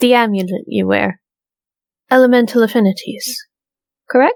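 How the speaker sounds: calm, certain, self-assured, confident tone. Voicing a character who approaches another in a game: very quiet but confident. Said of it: "she's going to say very, very quietly but confidently".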